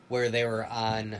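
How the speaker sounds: normal talking voice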